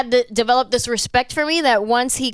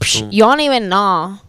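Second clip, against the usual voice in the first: loud, drawn-out, distinctive way of talking; 3 semitones lower, 5 dB louder than usual. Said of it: "like that?".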